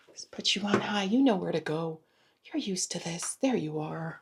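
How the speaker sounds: whispered, very soft. Talking to a device while plugging it in to charge, whispering. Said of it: "I don't know why I'm whispering".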